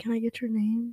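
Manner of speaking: soft-spoken, gentle, mild voice. Speaker retells a cute guy asking for her name: imitating his soft voice. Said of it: "he had such a soft voice".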